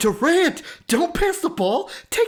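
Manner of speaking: very high, shrill, frantic screaming. Speaker retells a friend screaming during a game's final shot, re-enacting a friend screaming. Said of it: "he's screaming like".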